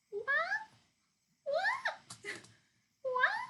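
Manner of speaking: loud, very high, squeaky cat-meow voice. Showing how a cat sounds: imitating Terry's meow. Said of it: "my best Terry meow impression".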